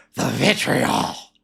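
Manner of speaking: put-on rough, creaky, rasping voice. Listing people who keep covering it: Vince McMahon voice. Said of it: "I like saying that in the Vince McMahon voice".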